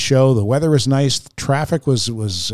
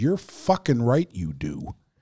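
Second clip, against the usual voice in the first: acted-out, mock-angry, furious tone; 7 dB quieter than usual. Retelling snapping back at a man who asked about sarcasm, retelling an angry retort. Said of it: "so fucking angry".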